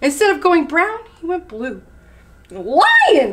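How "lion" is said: sudden, full, high screeching cry. Reading a story aloud, Meerkat calls out to Lion: screeched. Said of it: "screeched Meerkat".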